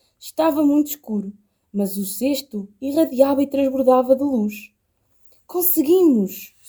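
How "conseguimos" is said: whispered, full of pride. Reading the story, the mother mouse speaks over the glowing basket: proud whisper. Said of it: "Sussurrou orgulhosa".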